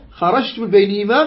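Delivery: ordinary talk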